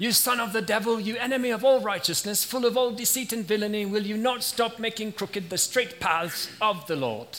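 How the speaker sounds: put-on British accent. Reading a scripture passage aloud, voicing Saul in a British accent. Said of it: "I like to imagine that Saul had a British accent".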